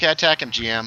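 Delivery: ordinary talk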